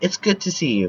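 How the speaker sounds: ordinary talk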